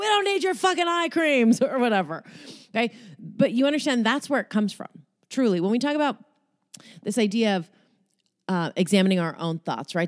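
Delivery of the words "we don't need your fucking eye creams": put-on, high, jacked-up, fired-up yelling. Describing getting fired up while doing push-ups, imitating own yelling. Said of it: "I'm just doing push-ups and yelling like".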